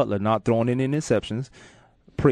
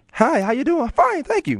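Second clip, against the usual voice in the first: very high, swooping, phony polite tone; 4 dB louder than usual. Speaker mocks how phony people greet each other: phony polite voice. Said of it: "this is how phony people do".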